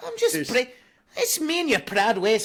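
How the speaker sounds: put-on Scottish accent. Answering a question about a funny voice with a put-on scottish accent. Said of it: "that was my Scottish, mate".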